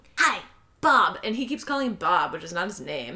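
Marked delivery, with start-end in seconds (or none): 0.2-1.2 sly, creeping, sneaky-sounding man's voice. Recounting a scene where an unseen man greets a restrained prisoner: imitating a sneaky-sounding man. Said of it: "the man is very, like, sneaky sounding".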